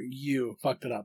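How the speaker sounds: heavy stress landing on the word you. Telling someone to stress the right word in the sentence: stress on the word you. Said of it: "make sure that you're stressing the right thing here".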